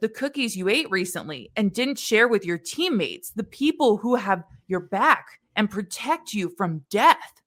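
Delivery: ordinary delivery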